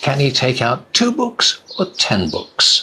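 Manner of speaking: rising pitch on "two books", falling pitch on "ten books". Intonation practice with a choice question, rising on two books, falling on ten books. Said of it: "The voice goes up and then down on the last one".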